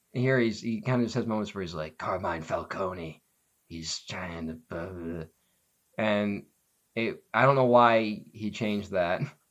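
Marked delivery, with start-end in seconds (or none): 2.0-5.3 low, dropped, masked-vigilante-style voice. Complaining about a film's hero voice, imitating it: Batman voice. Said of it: "the Batman voice in this movie".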